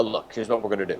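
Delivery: borrowed bass voice, dropped way down, deep. Imitating a man whose voice everyone copies: deep put-on voice. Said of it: "everyone does his voice like this".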